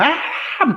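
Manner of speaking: urgent cry, pitched very high. Playing a character spotting a captured companion: screaming a name. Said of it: "I scream for him".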